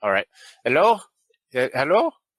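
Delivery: put-on loud, swooping broken-English accent. Game narrator voices the player's mom answering the phone, in broken English. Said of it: "your mom in her broken English go".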